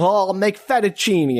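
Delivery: fettuccine said in a put-on Italian accent. Retelling what the mom said coming in to make dinner, Italian accent. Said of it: "Did she say it like that with that Italian accent?".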